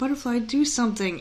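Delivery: put-on utterly sorrowful, forlorn little voice. Retelling what she said to the toy butterfly from the package, imitating her saddest voice. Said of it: "In like the saddest voice".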